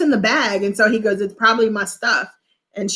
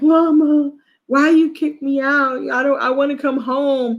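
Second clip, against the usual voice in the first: slow, tearful, sobbing crying voice; 4 semitones higher than usual. Retelling a crying boy pleading with his mom: imitating someone crying. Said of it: "he's sitting there crying".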